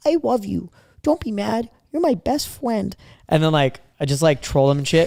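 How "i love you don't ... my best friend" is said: put-on little kid voice, high and slow. Retelling a phone call to someone who might be mad, in a little kid voice. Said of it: "I talk in like a like a little kid voice".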